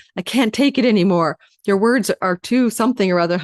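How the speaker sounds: plain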